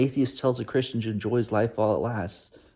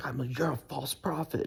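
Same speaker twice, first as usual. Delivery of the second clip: raised, heated, high-pitched voice; 3 semitones higher, 9 dB quieter than usual. Retelling a heated exchange with a church leader: retelling a raised voice. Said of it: "I raised my voice".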